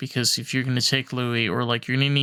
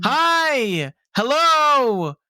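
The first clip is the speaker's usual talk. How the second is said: mock very high, drawn-out yell; 14 semitones higher, 6 dB louder than usual. Retelling a call from a loud convertible: imitating own screaming at phone. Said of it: "screaming at my phone".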